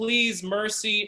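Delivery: mock sobbing, high, crying, begging tone. Retelling a fight, acting out the beaten guy begging: imitating someone crying. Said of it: "crying like".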